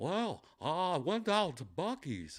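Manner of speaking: high, swooping, very slow drawn-out voice. Retelling a guy on stage who sounded like Hank Hill. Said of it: "he was just like".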